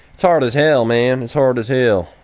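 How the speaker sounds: put-on rural American country accent. Answering a question about developing Roblox games, in a country accent. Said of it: "I don't know why I'm using a country accent".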